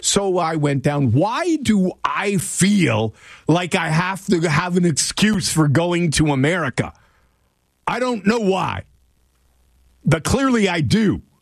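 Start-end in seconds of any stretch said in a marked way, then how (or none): 1.1-11.2 deliberate angry voice, high-pitched and slow. Explaining a trip down to America to listeners, in an angry voice. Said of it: "I'm using my angry voice".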